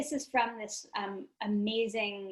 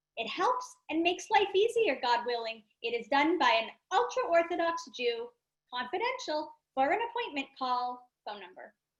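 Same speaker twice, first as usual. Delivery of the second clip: put-on grandmother voice, pitched higher; 5 semitones higher, 3 dB louder than usual. Reading an advertisement aloud in the speaker's grandmother's voice. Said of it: "read it in what I know is to be my grandmother's voice".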